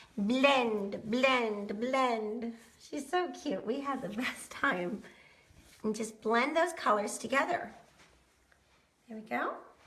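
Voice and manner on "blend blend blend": put-on pretty little Argentinian accent. While putting on the turquoise color, say it as Maria would, in Maria's pretty little Argentinian accent. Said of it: "in her pretty little Argentinian accent".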